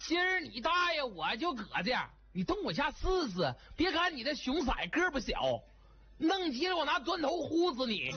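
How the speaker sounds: Northeastern Chinese dialect. Performing the first Northeastern dialect version of a line. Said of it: "第一版东北话".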